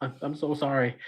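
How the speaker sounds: tearful, crying speech. Voicing a character who apologizes to a player: crying while apologizing. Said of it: "she's crying and she's like".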